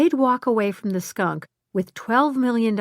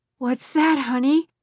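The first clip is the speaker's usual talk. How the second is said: drowsy, sleepy, just-woken voice, slightly high; 5 semitones higher than usual. A widowed father answers his daughter's late-night call, in a sleepy voice. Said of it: "her father asked in a sleepy voice".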